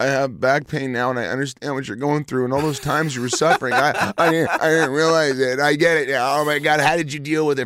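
put-on weepy, crying voice, high and tearful. Retelling how people came to them in tears: imitating someone crying. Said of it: "I've had people come to me crying, going".

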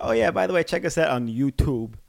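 put-on New York accent. Teasing the other speaker by repeating their youtube plug: imitating a new york accent. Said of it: "Your New York accent came out hard".

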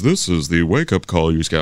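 robotic, machine-like automated voice. Speaker retelling picking up a wake-up call, in a robotic voice. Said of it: "it's the robotic voice".

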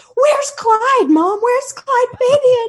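mock, very high, very loud, tearful sobbing wail. Retelling a family member's panicked accusation to her mom: imitating someone sobbing. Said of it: "And she's sobbing".

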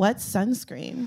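hushed, very soft. Retelling what she said to people planning a boating trip, very quietly. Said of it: "very quietly went".

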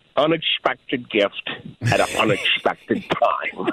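put-on Scottish movie-star voice. Quoting a line from Finding Forrester: Sean Connery impersonation. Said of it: "Nice little impersonation there with Sean Connery".

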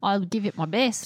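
wavering fake British accent. Trying out an accent when asked: put-on mixed british accent. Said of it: "It'll go in and out from English".

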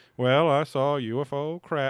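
put-on very slow, drawn-out, old-time twangy drawl. Retelling a UFO witness's words from a news clip: imitating Van Tassel's old-time talk. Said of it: "how everybody fucking talked before the nineteen eighties".

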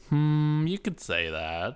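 said suspiciously. Asked if they came into money to support the podcast, in a suspicious tone. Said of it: "you said that kind of suspiciously there".

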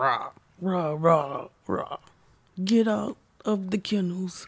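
monster voice with zombie-style growling rahs. Self-described terrible morning person acting out her mornings, in a monster voice. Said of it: "she's doing some sort of monster voice".

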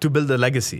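forceful, aggressive, loud yell. Retelling answering a repeated question at the dinner table: retelling an aggressive yell. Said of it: "But I said it very aggressively".

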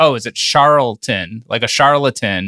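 normal talking voice

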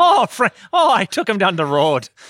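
drifting into Irish accent. Asked to hear a Minnesota accent, the speaker drifts into an Irish accent. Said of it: "now I'm starting to go Irish".

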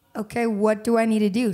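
plain

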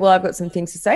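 plain

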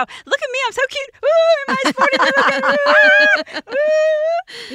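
very high, loud, self-delighted, preening showing-off tone. Imitating the other speaker showing off her new car: imitating someone being proud. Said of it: "she was so proud of herself".

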